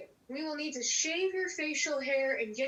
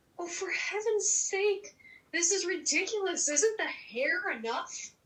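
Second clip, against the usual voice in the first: high-pitched, whiny, griping tone; 5 semitones higher than usual. Being given contacts to hide eye color, complaining to the one doing it, whining. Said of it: "quit your whining".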